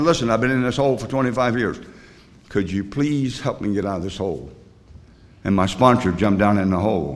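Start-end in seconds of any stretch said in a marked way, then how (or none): none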